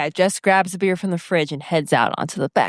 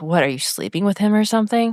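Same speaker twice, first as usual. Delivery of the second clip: ordinary talk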